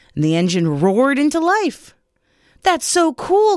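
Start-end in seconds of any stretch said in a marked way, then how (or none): 2.6-3.6 storybook-style exclaiming, crying out, pitched up. Narrator reading a story character's reaction as an engine starts, crying out. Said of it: "cried Toby".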